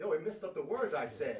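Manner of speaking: plain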